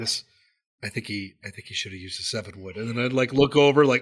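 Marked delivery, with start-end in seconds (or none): 0.0-2.8 soft, hushed half-whisper under the breath. Retelling commenting on a golf shot within players' hearing: retelling a half-whisper. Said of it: "whisper it".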